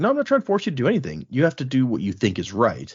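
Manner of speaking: ordinary talk, nothing marked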